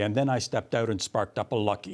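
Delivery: flat monotone detective voice. Reacting to a written account, imagining its ending in Joe Friday's flat monotone. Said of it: "the flat uh, monotone of Joe Friday".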